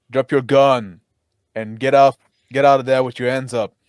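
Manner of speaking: loud, barked yelling. Ordering an armed man in character to drop his gun: yelling an order. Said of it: "I yell again".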